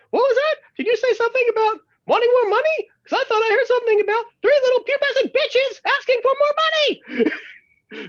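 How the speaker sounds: bad cartoon mouse voice, very high, squeaky. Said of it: "crappy Mickey Mouse voice".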